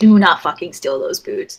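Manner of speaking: quick whisper under the breath. Playing a character warning another player's character: whispering under her breath. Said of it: "Raven just quickly whispers under her breath".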